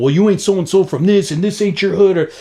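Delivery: argumentative street-gangster voice. Retelling a standoff over graffiti, imitating gangsters arguing. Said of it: "like, gangsters arguing".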